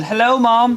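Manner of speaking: very high-pitched fake British accent. Host making up a line for someone greeting Mom, in knockoff British accent.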